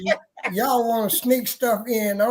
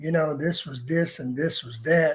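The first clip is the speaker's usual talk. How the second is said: put-on stern voice, low and deep; 6 semitones lower, 3 dB quieter than usual. Retelling what she told the speaker after handing it over, in a deep voice. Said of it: "and we're in that deep voice".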